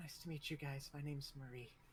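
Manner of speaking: soft-spoken, quiet, reserved woman's voice. Retelling how a very quiet woman introduced herself to the group, very quiet voice. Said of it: "woman who's very quiet just kind of is like".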